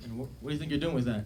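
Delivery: plain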